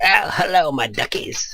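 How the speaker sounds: bad put-on Cockney accent, high and slow. Trying out a cockney accent to read game text: attempted cockney accent. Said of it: "let me get in the mood".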